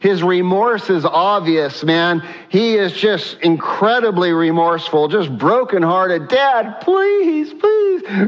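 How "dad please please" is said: play-acted weeping, tearful and very high. Retelling the Bible scene of Esau begging his father, Esau's tearful plea. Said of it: "Tears coming down his face".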